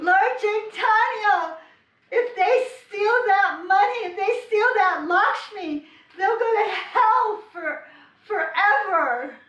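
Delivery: very high, top-of-the-lungs, full-lunged shout. Retelling shouting after boys who stole a bag: retelling a scream at top of lungs. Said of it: "I just shouted like that at the top of my lungs".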